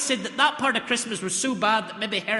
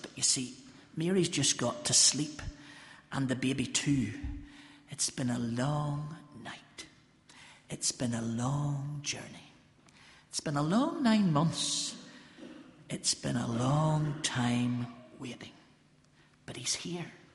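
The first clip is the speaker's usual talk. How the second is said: hushed whisper, lower and quieter; 7 semitones lower, 7 dB quieter than usual. Talking while Mary and the baby have just fallen asleep: whispering. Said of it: "Excuse me if I whisper".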